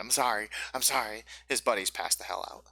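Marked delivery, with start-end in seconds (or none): 0.0-1.2 apologetic, pleading goblin voice. Voicing a goblin apologizing after being slapped: apologetic goblin voice. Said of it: "he just starts speaking in common".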